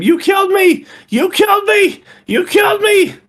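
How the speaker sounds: very high, repeated, drawn-out screaming. As a woman chasing a man who is running away, keep repeating yourself in a high-pitched scream. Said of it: "Just yelling a high pitched scream".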